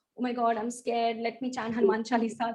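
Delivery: ordinary delivery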